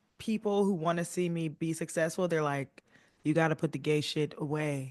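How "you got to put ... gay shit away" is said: normal talking voice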